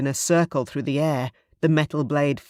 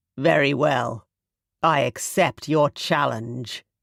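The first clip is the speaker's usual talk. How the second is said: icy, cold, steely, hard-edged tone. Reading a story, a dragon king accepts another king's challenge, cold voice. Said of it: "King [name], / [name] inclined his head, / his voice was cold. / His eyes were steely, and when he spoke, his voice was cold".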